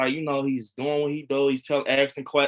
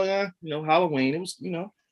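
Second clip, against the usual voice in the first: put-on casual, nonchalant, offhand delivery; 3 semitones higher than usual. Retelling an autograph signing: imitating Tom Atkins's nonchalant answer. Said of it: "nonchalant answer".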